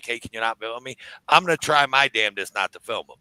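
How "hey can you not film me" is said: calm, soft, polite and non-aggressive voice. Showing how to ask someone not to film you, calm, not aggressive. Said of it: "Not get aggressive, just be like".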